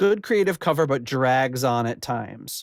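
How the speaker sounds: ordinary talk, nothing marked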